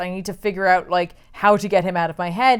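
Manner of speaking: usual speaking voice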